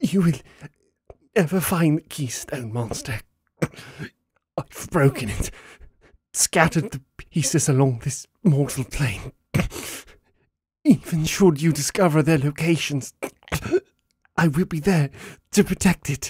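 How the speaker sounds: pained, defiant, high-pitched, forced speech. A battered elf mage defies the one standing over her, forcing words through a broken jaw.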